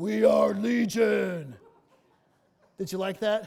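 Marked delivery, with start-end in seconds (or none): 0.0-1.5 loud, gruff, creaky would-be manly voice. Retelling the Gospel scene, the speaker voices the man answering Jesus; attempted manly voice. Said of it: "I don't have a manly voice, but that's the best I could do".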